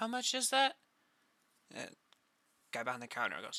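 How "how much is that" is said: very high-pitched voice. Voicing Ilakin at the counter after switching voices: Ilakin's voice. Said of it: "sorry, wrong voice".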